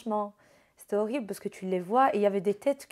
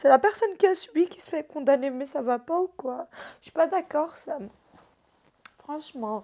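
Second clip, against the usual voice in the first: speaking through tears; 6 semitones higher, 4 dB louder than usual. Speaking while trying to stop crying, crying. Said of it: "je pleure vraiment là?".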